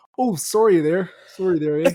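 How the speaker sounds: put-on Canadian accent. Chatting about a movie, quoting a character's catchphrase in Nicepool's Canadian accent. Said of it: "with the Canadian accent".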